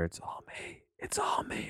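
very soft, breathy whisper close to mic. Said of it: "I'll whisper into the mic really softly".

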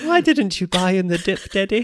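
put-on squeaky, very high-pitched English accent. An owner voices his English terrier addressing him as Daddy, voicing the dog, English accent. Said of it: "Now she speaks like this".

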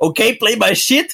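high, raging, mock furious bellow. Retelling a rage YouTuber yelling in the background over a game: imitating a rage roar. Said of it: "im Hintergrund gebrüllt hat".

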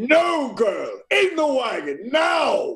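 firm, high-pitched, commanding alpha tone. Player character casts Thaumaturgy and gives an animal orders, going alpha, commanding. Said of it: "I'll cast Thaumaturgy. And I'll go alpha".

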